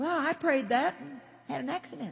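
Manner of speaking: soft, whiny, doubting voice.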